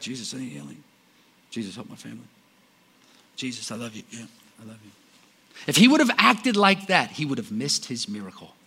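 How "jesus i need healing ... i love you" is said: mumbled under breath, much quieter and lower. Speaker imagining how blind Bartimaeus might have prayed, mumbling under his breath. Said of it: "kept mumbling under his breath".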